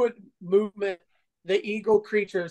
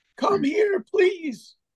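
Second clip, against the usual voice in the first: put-on shrill, very high, pitiful weeping of an old man; 11 semitones higher than usual. Game master voicing an old man who calls out to the players, crying pitifully. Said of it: "you hear the old man crying pitifully".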